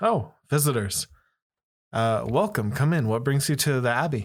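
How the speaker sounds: outward welcoming voice, called out. A pastor turns to greet visitors arriving at the abbey, somewhat loud. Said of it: "somewhat loudly says".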